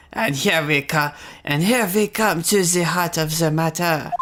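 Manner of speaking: put-on German accent drifting into French. Voicing a courtroom line in a put-on german accent sounding french. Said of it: "that sounded French".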